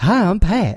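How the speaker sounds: high, eager character voice. Doing the Pat voice, said to sound like Zach Galifianakis: Zach Galifianakis voice. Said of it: "That sounds exactly like him".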